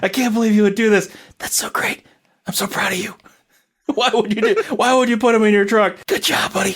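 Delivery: squealing, very high-pitched shouting. Retelling how Deadpool reacted to the speaker, imitating Deadpool yelling. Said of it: "Deadpool starts yelling at me like".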